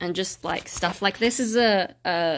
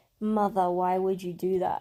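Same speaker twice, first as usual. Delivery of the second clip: speaking in a put-on dog voice. Imagining what the dog thinks about the lipstick: voicing the dog. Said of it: "I wonder if he can tell and if he's like".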